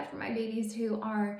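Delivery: normal talking voice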